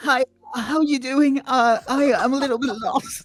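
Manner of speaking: very high beta-male voice. Acting out distracting the guards, speaking in a beta male voice. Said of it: "gonna do his beta male voice".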